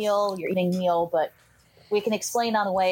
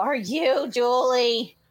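exasperated, fed-up, pitched-up, at wits' end; 5 semitones higher than usual. Asking a stranger at her door if she is Julie: exasperated. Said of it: "Exasperated, I just go".

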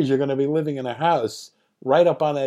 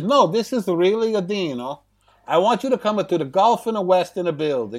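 unbelievably exaggerated, thick, over-the-top Italian accent; 3 semitones higher than usual. Retelling what a caller said on the phone, doing Dino De Laurentiis's over-the-top Italian accent. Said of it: "the most over-the-top and unbelievable Italian accent".

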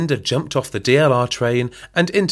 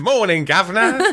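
chimney sweep voice, pitched very high; 10 semitones higher than usual.

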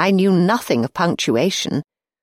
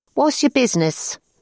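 suspicious, wary, pitched up; 7 semitones higher than usual. A girl at the pigeonhole questions a visitor asking to see someone, suspicious. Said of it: "asked the suspiciously minded girl".

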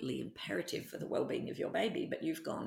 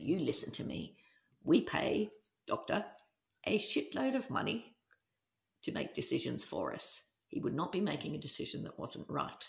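ordinary talk

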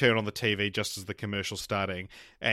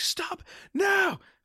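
shrill, sky-high scream. Recounting a film's final scene, retelling a man's scream. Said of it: "he's like screaming".

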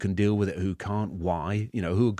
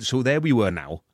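put-on Welsh accent; 3 semitones higher, 4 dB louder than usual. Retelling how Welsh people talk about time, in a Welsh accent. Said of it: "my Welsh accent".

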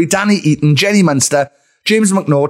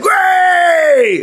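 mock drunk man voice, pitched higher; 13 semitones higher than usual. Imitating a guest who greets like a drunk dad at a wedding. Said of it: "that's drunk dad at a wedding".

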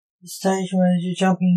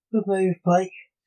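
plain reading voice

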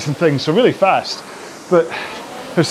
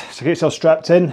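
ordinary talk, nothing marked

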